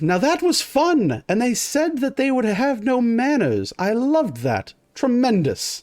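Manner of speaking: very high, boastful, swooping sing-song. Narrating the scene as the men stand at attention; boastful Inquisitor voice. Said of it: "you can hear like a boastful voice goes".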